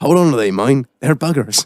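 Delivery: put-on, imitated creepy man voice. Retelling what a man said walking past: imitating a creepy stranger's voice. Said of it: "with that fucking voice".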